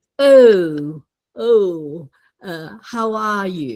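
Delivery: round-mouthed, very English accent with drawn-out "oh". An English speaker explaining pronunciation shows speaking in a very English way. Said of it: "speak English in a very English way".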